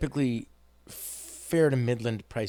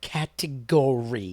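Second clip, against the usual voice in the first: exaggeratedly crisp, mocking speech; 3 dB louder than usual. Retelling a word AOC said in a hearing: imitating AOC over-enunciating. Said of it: "when you enunciate every syllable".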